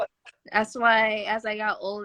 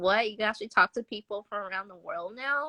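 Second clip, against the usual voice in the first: ordinary talk, nothing marked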